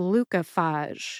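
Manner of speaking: glucophage with first and third syllables stressed. Pronouncing a drug name on a show: stress on glu and phage in Glucophage. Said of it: "I personally stress the first and third syllables most".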